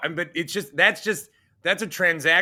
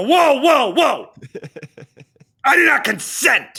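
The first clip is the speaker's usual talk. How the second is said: mock-aggressive, much higher and louder; 9 semitones higher, 8 dB louder than usual. Retelling how they answered a recorded phone call, imitating an aggressive retort. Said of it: "And I was like that aggressive".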